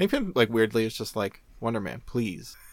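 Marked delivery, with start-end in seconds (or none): 1.6-2.6 pleading, guilt-tripping tone. Retelling a comic scene where Hank Pym guilts Wonder Man: guilt-tripping Hank Pym voice. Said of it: "guilts him into doing it".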